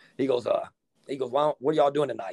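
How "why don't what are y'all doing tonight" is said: put-on gruff, rough-spoken voice. Retelling what a coach asked at the hotel: imitating Coach Garmatz's gruff talk. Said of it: "he talked real gruff".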